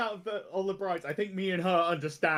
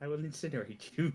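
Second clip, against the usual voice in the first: hushed, very soft half-whisper; 5 semitones lower, 5 dB quieter than usual. In a roleplay, a character half-whispers to her so no one hears. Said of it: "I'm whispering this to her so no one hears".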